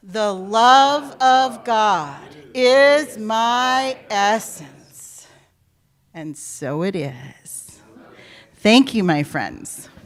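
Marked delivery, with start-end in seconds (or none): 0.2-5.3 slow, forceful, powerful delivery on a deep breath. Leading the gathering in a spoken affirmation after a deep breath, powerful, forceful declaration. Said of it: "say it with power and force".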